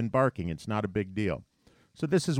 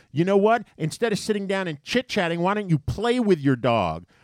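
acted yelling; 9 semitones higher, 5 dB louder than usual. Quoting a woman who kept yelling at the speaker, retelling a yell. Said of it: "yelling at me".

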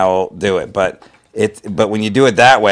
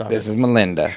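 quieter, put-on southern accent; 4 dB quieter than usual. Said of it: "I always like Southern voices".

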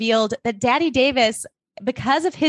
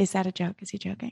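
put-on quiet voice, lower; 5 semitones lower, 9 dB quieter than usual. Retelling a story, imitating someone who kept asking the same question: mimicking quiet repeating. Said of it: "she just keeps quietly going".

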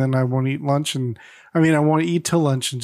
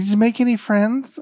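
put-on lisping voice, higher pitched; 7 semitones higher than usual. Retelling what a sister asked about the new job: Janice impression with a lisp. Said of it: "every time you imitate one of your sisters, you do it with a lisp".

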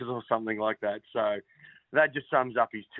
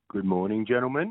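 low-key, unenthusiastic, flat delivery; 2 semitones lower than usual. Greeting the other hosts on air: Richard Mercer impersonation. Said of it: "that was my Richard Mercer impersonation".

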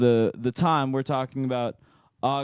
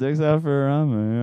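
normal talking voice

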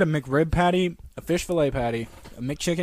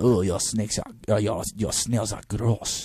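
mock French accent, much slower; 7 semitones lower than usual. Joking about French visitors after mocking their accent, mock French accent. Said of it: "you think you can come over here and say".

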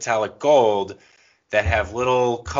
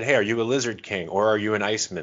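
ordinary talk

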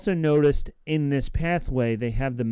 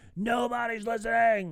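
mock outright shouting, pitched high; 9 semitones higher, 4 dB quieter than usual. Retelling a scene where Andor shouts: imitating Andor shouting. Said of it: "and he shouts it".

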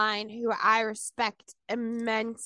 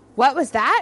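very loud, acted-out startled outburst; 3 semitones higher, 9 dB louder than usual. Retelling how the devil woke from a nap, as the devil waking up startled. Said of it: "he immediately woke up and was like".

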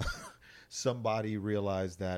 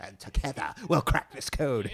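raised, high British film-scientist voice; 5 semitones higher, 7 dB louder than usual. Joking with a co-speaker who says they sound like the scientist: Pacific Rim British scientist voice. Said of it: "You sound like the fucking scientist from Pacific Rim".

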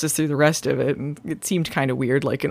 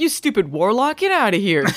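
put-on woman's voice, higher pitch; 6 semitones higher than usual. Imagining what the lady at the murder scene says to the warlock: imitating her. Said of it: "Is she just like".

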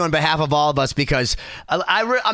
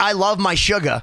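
plain

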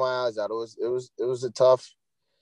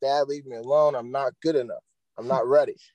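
put-on crying while talking. Retelling words said to dad in the bedroom before a tournament: imitating own past crying. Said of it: "I'm crying".

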